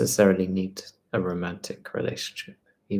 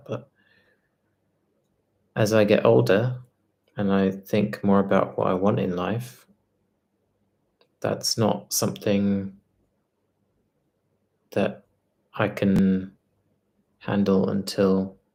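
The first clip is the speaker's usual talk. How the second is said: compromised speech, much slower. Speaker whose speech is still compromised, talking really slowly. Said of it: "I'm talking really slowly because my speech is still kind of compromised".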